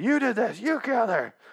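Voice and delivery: mock, very high-pitched, frantic, freaked-out blaming tone. Retelling a scene where a man comes after another character: retelling someone freaking out. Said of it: "Freaking out".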